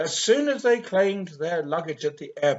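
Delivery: ordinary delivery, nothing marked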